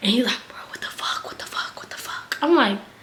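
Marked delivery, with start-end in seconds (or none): 0.5-2.4 mock, hushed, panicked, freaked-out whisper. Retelling how a companion reacted to a passing car: imitating someone freaking out. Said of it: "he starts freaking the fuck out".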